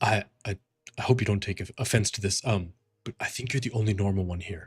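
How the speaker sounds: low, hushed, stumbling whisper under the breath. Voicing a nervous prisoner asking a fighter for protection: whispering quite low. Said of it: "trying to whisper".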